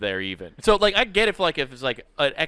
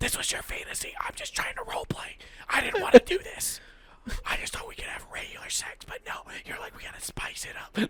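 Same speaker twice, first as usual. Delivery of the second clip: hushed, angry whisper, higher and quieter; 6 dB quieter than usual. Acting out a hidden couple arguing while the kid is up: whisper arguing. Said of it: "They're whisper arguing while the kid's up".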